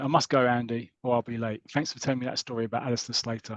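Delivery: ordinary delivery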